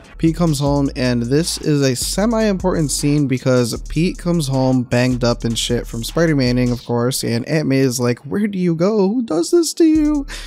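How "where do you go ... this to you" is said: emotional delivery, pitched very high. Recapping a scene where Pete comes home banged up, acting out emotional Aunt May. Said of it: "She's all emotional and shit".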